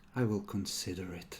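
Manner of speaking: alluring whispered female voice. An unseen voice whispering in a player's ear during a game, seductive female whisper. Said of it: "whisper in a seductive female voice in your ear".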